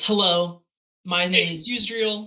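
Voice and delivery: in-character kobold chieftain voice. Voicing a kobold clan leader greeting the group: Yggdrasil voice. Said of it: "greets you all in common and says".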